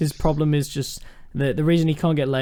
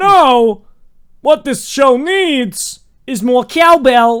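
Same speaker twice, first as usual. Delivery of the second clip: awful put-on voice, shrill, booming, high, loud, slow; 9 semitones higher, 8 dB louder than usual. Retelling a TV guest's terrible impression: imitating Tom Hiddleston's terrible Christopher Walken impression. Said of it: "He was just going".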